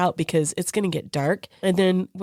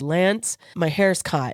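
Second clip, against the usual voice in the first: normal talking voice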